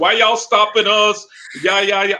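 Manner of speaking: put-on angry, high, heated screaming. Speaker retells Veltra yelling at the police: imitating Veltra yelling. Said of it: "Veltra's screaming, he's yelling at the police".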